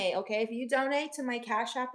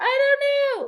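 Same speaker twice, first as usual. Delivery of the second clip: mock talking through laughter, very high, loud; 13 dB louder than usual. Retelling being asked what was so funny: imitating laughing while talking. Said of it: "while still laughing".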